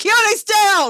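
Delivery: very high, shrill, loud scream of alarm. Voicing Seth in the middle of a fight: screaming. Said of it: "Seth just screams".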